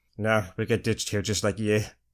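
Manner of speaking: suave poser voice, slight Scottish turn, "you" as "yuh". Doing an impression of a character, one of the smooth posers: impression of a smooth poser character. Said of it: "impression of a character. One of the smooth posers".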